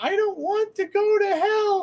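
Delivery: tiny little voice, very high. Retelling a voice heard from the phone, in a tiny little voice. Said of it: "this little tiny voice come out of nowhere saying".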